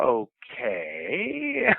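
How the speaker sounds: placating, humoring okay with swooping pitch. Retelling how the kid behind the library desk replied: imitating a tone for a crazy person. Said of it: "in that tone of voice that, you know, meant like, "Okay, crazy person."".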